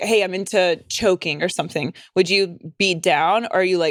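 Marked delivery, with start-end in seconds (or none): none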